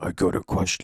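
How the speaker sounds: changed voice dropped down to pretty low. Showing how a vocal line was recorded: speaking pretty low. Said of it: "like, pretty low".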